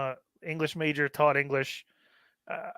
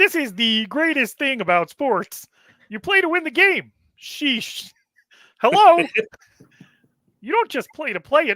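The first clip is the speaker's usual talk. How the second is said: squeezed, high pitched, loud voice; 10 semitones higher, 8 dB louder than usual. You take a turn reading a Herm Edwards quote as a Kermit the Frog impression. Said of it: "read this Herm Edwards quote as if you were Kermit the Frog".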